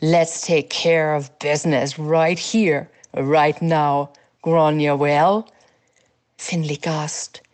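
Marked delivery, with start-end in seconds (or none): 0.0-5.5 scornful sneer, lower pitch. A man points his sword at a servant on the ground, sneering. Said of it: "he sneered".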